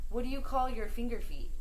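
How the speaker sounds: normal talking voice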